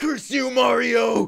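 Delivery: put-on video game villain voice. Reenacting the end of a match conversation: Bowser voice. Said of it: "And Bowser's like".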